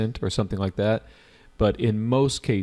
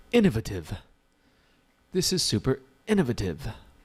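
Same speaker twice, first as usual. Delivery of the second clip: affected, put-on British accent, sing-song; 2 semitones higher than usual. Teaching synonyms, keeping up a put-on British accent for a student who loves it. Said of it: "Hanan loves my British accent".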